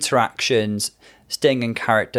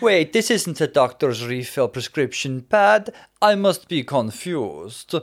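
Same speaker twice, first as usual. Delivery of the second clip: put-on Russian accent, higher pitch; 4 semitones higher than usual. Recalling Fame's performance as Donatella Versace, with a tragic Russian accent. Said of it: "with a Russian accent".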